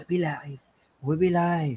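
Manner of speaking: calm, restrained delivery. Host redoing the show opening after being told not to yell: toned down, not yelling. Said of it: "Is that better?".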